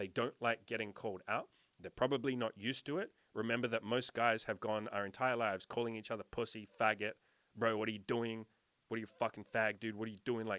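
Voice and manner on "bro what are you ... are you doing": put-on rough guy voice. Acting out how men talk to each other: imitating rough guy talk. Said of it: "we talk very roughly to each other".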